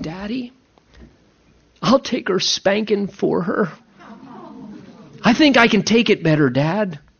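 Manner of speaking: small, sweet little voice. A father quotes his older daughter offering to take her sister's spanking, in a sweet little voice. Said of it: "that just sweet little voice saying".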